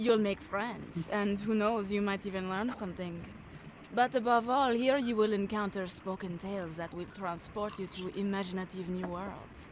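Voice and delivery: put-on beautiful, sultry French-accented voice. Reading a promo script after being asked for a sultry French accent. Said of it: "a beautiful, sultry French".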